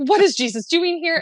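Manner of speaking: mock starstruck, high, excited fangirl gush. Retelling seeing jesus across the circle: imitating own excited fangirling. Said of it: "I was fangirling".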